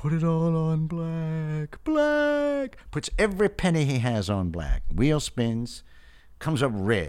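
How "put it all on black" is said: eerie, high, slow, drawn-out ghostly spectral voice. Telling a joke, speaking the ghost's lines in a ghostly voice. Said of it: "Ghostly voice says".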